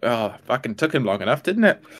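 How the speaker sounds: grumbling voice. Speaking in character to the private: muttering under one's breath. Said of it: "under my voice to the private".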